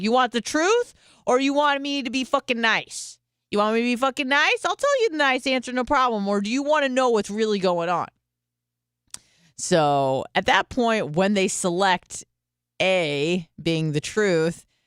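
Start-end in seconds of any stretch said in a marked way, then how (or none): 0.0-8.1 put-on New Jersey Italian accent, pitched up. Retelling what the speaker said to their mom: put-on jersey italian accent. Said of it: "turned into some like fucking Italian bitch from Jersey".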